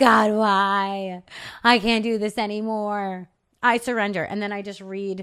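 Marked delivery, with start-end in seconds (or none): 0.0-4.2 loud, slow, play-acted hysterical sobbing. Retelling own words on knees, screaming at god: imitating hysterical crying. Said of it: "hysterically crying and saying".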